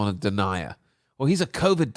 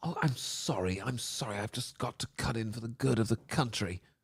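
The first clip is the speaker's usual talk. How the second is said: mock concerned female voice, quieter; 10 dB quieter than usual. Imitating an interviewer cutting in: mocking a concerned woman. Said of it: "the concerned female".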